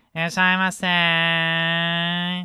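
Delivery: slow, high, drawn-out nasal Japanese-style call.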